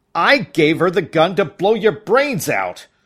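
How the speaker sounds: loud, high-pitched outburst at full shout. Reading a first-person story aloud, voicing a man answering the narrator: shouting. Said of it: "he shouts".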